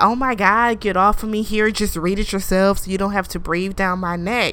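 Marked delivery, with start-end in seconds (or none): none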